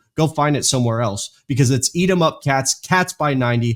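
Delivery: ordinary delivery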